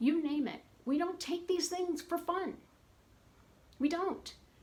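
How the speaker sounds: upset, angry yelling, pitched high. Speaker talking to a group that follows their journey, angry yelling. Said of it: "I know I'm yelling and I'm upset".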